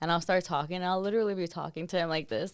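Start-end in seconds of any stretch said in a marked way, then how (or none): none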